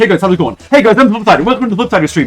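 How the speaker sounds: rapid-fire, really fast speech. Showing how familiarity with words matters, talking really fast. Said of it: "if I just start talking really fast".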